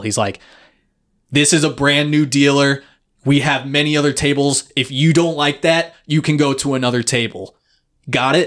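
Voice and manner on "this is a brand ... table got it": firm, stern, laying-down-the-law scolding tone. Retelling how a coworker spoke to players at a table: imitating someone yelling. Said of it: "yelling at these people".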